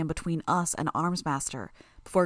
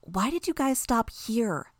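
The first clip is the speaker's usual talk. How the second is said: murmured, higher pitch; 4 semitones higher than usual. Reading a story, one character speaking to the group, murmured. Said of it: "Tattletale murmured to us".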